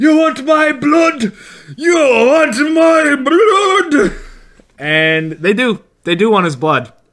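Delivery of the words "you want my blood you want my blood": mock, very high, stretched-out, drawn-out yelling. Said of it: "yell repeat".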